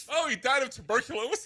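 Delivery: high voice, giggling through the words. Saying a word you can't say without laughing, laughing while speaking. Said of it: "I can't even say it without laughing".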